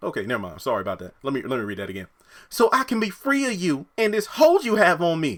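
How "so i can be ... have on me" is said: put-on slow, very high country accent. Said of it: "I guess you could probably tell what character I'm talking as based off the country accent".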